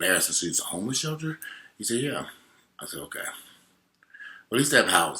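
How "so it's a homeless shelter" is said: hushed, discreet, slightly high half-whisper. Retelling a conversation with a man, not wanting to embarrass him, retelling a half-whisper. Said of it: "I'm whispering".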